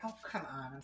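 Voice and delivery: put-on very soft, prissy Southern accent. Describing how someone talks, imitating her: Southern and prissy Sutton voice. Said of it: "Southern and prissy".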